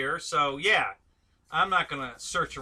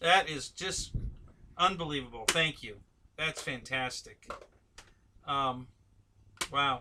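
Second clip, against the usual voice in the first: choked up, emotion catching, voice thick; 3 dB quieter than usual. Thanking someone for a gift, choked up. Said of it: "Getting a little choked up here".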